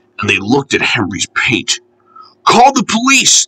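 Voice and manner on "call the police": furious, angry, very high-pitched yell. Narrating everyone's cross reaction to the fireman's bumped head, shouting angrily. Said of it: "they shouted angrily".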